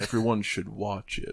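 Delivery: slow, deliberate, unhurried, drawn-out delivery. Repeating another speaker's line to tease him: imitating slow delivery. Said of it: "when he said as slow as he said it".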